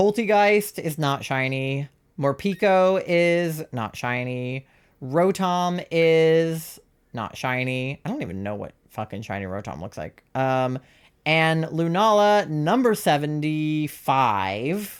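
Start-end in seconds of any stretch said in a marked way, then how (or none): 12.5-15.0 very slow, each word dragged out. Going through a list of Pokémon to see which are shiny, very slow. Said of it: "I don't know why I said it so slowly".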